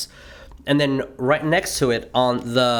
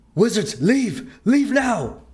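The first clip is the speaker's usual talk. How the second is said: very high, frantic, panicked cry; 9 semitones higher than usual. Game master voicing a character who lowers his wand, in a very panicked voice. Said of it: "you hear him in a very panicked voice".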